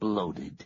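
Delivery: ordinary delivery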